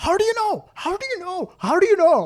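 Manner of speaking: put-on very high-pitched, squeaky, strong Indian accent. Quoting a man who kept repeating himself, in a strong Indian accent. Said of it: "in a strong in Indian accent".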